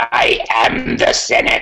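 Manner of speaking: sci-fi villain lord delivery. Praised by a co-host for his Sith Lord voice, the speaker answers in it: Sith Lord voice. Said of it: "you've got an excellent voice for Sith Lord".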